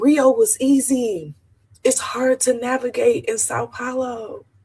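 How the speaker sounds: tearful, emotional voice, near tears, crying while talking. A traveler tells listeners how hard Sao Paulo is to navigate: getting emotional, crying. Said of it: "I'm getting emotional because it's so hard".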